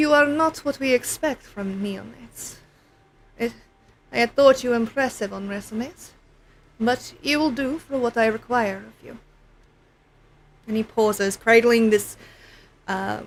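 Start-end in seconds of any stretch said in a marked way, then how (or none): 0.0-9.2 put-on soft, faint, slight Slavic accent. A game narrator voices a character addressing the player, with a strange hint of Slavic accent. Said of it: "with a strange hint of a Slavic accent".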